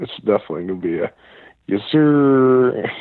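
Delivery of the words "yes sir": booming, belted yell with the word "sir" drawn out. Asked for your best impression of the coach landing a five-star lineman, do a Sam Pittman impression. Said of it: "your best impression of Sam Pittman".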